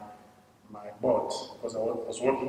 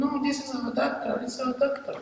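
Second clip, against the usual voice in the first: mock, very high, shrill boy's scream. Retelling how a boy working for the soldiers stopped them: imitating a boy screaming. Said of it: "just started screaming".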